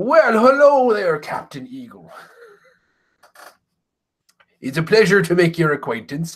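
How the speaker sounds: swooping, sing-song pirate voice. A player voices a character greeting captain eagle, pirate voice. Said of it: "This guy talks like a pirate".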